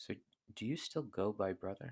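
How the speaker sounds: soft, hushed half-whisper in a character voice. Leaning over to ask another character a question in character: half-whispering. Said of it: "she's just gonna whisper".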